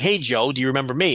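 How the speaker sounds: mock sunny, friendly, very cheerful tone. Retelling a phone call where a caller greeted him, mimicking a very cheerful caller. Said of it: "In a very cheerful voice".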